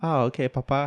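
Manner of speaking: put-on small child's voice. Picturing a movie scene, voicing the kid answering his father: put-on kid's voice. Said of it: "kid's voice".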